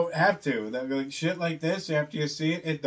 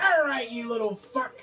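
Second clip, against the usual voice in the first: put-on angry woman's yelling, pitched higher; 7 semitones higher than usual. Retelling a scene where she yells at him, imitating a woman yelling to fight. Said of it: "she yells at him like she's gonna fight".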